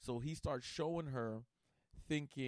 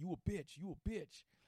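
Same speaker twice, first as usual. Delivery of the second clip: mock shouting, high-pitched, same words over and over; 7 semitones higher than usual. Retelling how a friend kept yelling insults: imitating a friend yelling. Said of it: "he just kept yelling".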